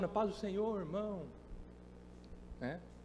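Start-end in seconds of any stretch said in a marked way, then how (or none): 0.1-1.3 soft, quiet, pious-sounding reverent tone. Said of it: "falam uma linguagem, é, como cidadãos do céu".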